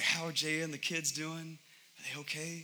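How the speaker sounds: anxious, careful, hushed stage whisper. Retelling how out-of-town family and friends ask about the family: imitating a half-whisper voice.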